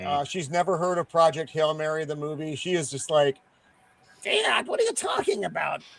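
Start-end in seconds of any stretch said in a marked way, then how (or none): 4.2-5.8 creaky, put-on childlike kid voice. Telling how his daughter reacted to a movie mention, imitating his daughter's voice. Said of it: "was that a Bart Simpson impression? ... that's the way my daughters sound".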